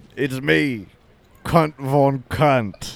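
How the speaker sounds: slow put-on Australian vampire character voice. Introducing a put-on character to the others: Australian vampire voice. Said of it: "the Australian vampire".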